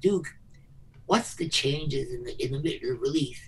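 quiet whisper. Retelling a question asked into someone's ear: retelling a whisper. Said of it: "I whispered in his ear".

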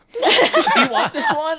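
put-on very high, loud, drawn-out carrying voice. Acting out teasing a friend in a shop: acting out speaking loudly. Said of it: "loudly in the store".

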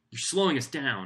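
biting, cutting tone. A narrator reads Sean, who has turned to glare at the speaker, speaking sharply. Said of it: "he says sharply".

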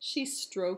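plain

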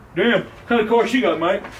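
exaggerated, laid-on put-on grandpa voice. Impression of Grandpa coming to look at grandma's car, imitating a grandpa. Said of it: "This is my impression of Grandpa coming to look at her grandma's car".

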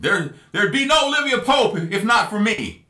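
mock emotional outburst yell. Retelling a TV scene where Rowan snaps: imitating Rowan yelling. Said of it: "he just starts yelling".

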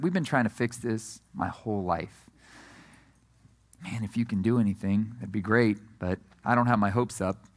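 tired, weary, defeated, resigned voice. Acting out a boy's father asking Jesus for help: imitating a resigned voice. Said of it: "you hear the resignation in this guy's voice".

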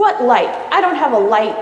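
loud, snappish, snapping delivery. At the movies, a girl answers a friend's request, snapping. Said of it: "Firenze snapped".

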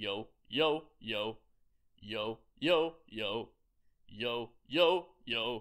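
deep, loud chest voice with low larynx.

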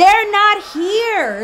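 high, slow, drawn-out yell.

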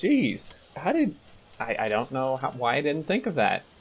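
sarcastic, high, loud mock amazement.

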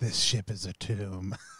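hushed, very slow, very drawn-out half-whisper. Playing a character as the ship reshapes them: half-whisper. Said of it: "And I just whisper".

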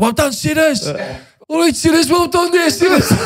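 very high, cheering football-terrace voice. Speaker recalls the crowd praising him after a goal, imitating a Villa fan. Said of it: "Is that a Villa fan".

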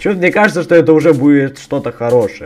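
openly sarcastic, plain to hear. Player commenting while starting a game mod, sarcastic. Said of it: "с сарказмом говорю".

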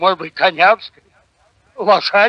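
ordinary delivery, nothing marked

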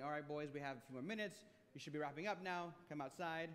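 ordinary talk

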